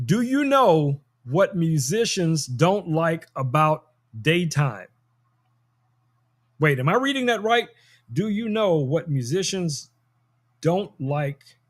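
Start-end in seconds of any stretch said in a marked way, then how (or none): 0.0-4.9 slow, drawn-out, deliberate, spelled-out delivery. Repeating a joke for listeners who may be too young to get it, saying it slowly. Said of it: "I'm gonna say it slow".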